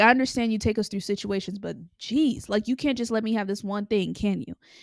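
angry, exasperated, frustrated outburst, letting loose. Retelling venting at God while sitting on bed: imitating own angry outburst. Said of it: "literally just letting him have it".

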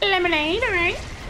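very high, squeaky drive-thru worker voice.

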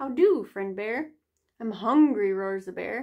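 ordinary delivery

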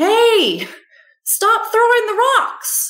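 mock playful, swooping shout, very high. Retelling calling out to unseen rock throwers: imitating own playful yell. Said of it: "yelled out loud".

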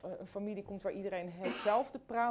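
ordinary delivery

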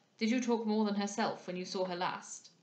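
plain

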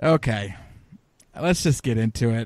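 deflated, defeated voice, sounding beaten. Moving the show into the fight card discussion, sounding defeated. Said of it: "I'm not trying to sound so defeated".

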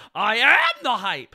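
very loud, very slow, drawn-out, enraged shriek. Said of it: "Where he just shrieks it".

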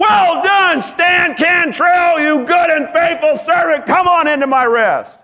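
shrill, very high, loud shouting yell. Imagining heaven calling out praise to a faithful servant: imagined yelling. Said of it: "I'm going to hear them yelling".

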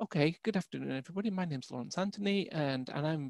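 very soft, hushed, barely-there speaking. Saying a presentation opening out loud, in a quiet voice. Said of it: "in a quiet voice like this".

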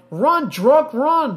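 mock hollered, high and loud yell. Telling a joke about tossing lit matches under a seat at a football game, retelling a yell. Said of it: "tossed them under a seat and yelled".

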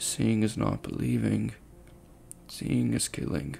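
dull monotone. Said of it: "said in a dull monotone as though he was in some sort of trance".

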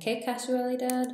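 high, loud exclamation in Spanish. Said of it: "how we say por casualidad".

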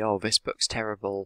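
normal talking voice

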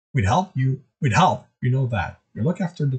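ordinary delivery

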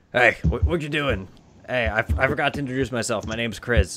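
gnome character voice, stammering and tripping over words. Voicing the gnome as he walks up and introduces himself: Chris the gnome voice. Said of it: "he kinda walks up and he's".

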